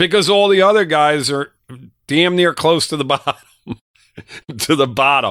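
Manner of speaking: words breaking into laughs. Talking about the offensive line with another speaker, laughing while talking. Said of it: "I couldn't even say that, you know, without laughing".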